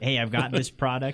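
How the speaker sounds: ordinary talk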